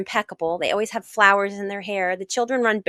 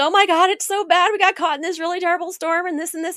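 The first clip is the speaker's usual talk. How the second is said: put-on teary, upset voice; 9 semitones higher, 3 dB louder than usual. Retelling answering his question at happy hour on his boat, retelling tearing up. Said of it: "I just start tearing up".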